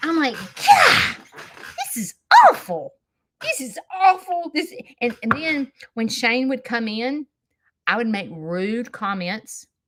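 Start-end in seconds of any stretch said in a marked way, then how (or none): 0.3-4.5 play-acted fed-up frustration, raised and drawn out. Retelling sitting alone all day: imitating own frustration. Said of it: "found myself so darn frustrated".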